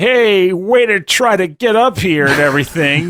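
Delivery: menacing villain voice, slow and drawn out. Retelling a game where a villain greets the player at the top, mock-ominous villain voice. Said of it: "in a more ominous tone".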